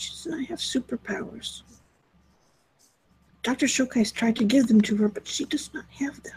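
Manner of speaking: hushed, very quiet, soft delivery. Speaking in character to a nurse about tests: speaking very quietly. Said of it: "she says it very quietly".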